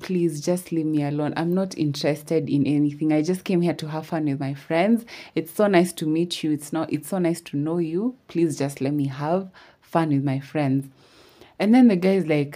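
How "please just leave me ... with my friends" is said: ordinary talk, nothing marked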